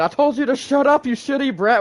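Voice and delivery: high, loud angry yell. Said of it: "when he starts yelling at him".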